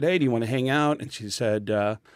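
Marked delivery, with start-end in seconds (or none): none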